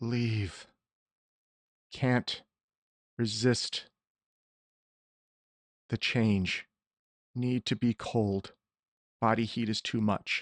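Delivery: agonized, foreboding monster voice. Storyteller voicing a dragon speaking Draconic: pained, ominous dragon voice. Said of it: "a pained, ominous voice come forth from the dragon".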